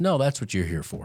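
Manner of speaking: put-on brusque, sharp, curt, cutting tone. Retelling how he answered the question: imitating a sharp reply. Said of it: "it was so sharp the way he said it".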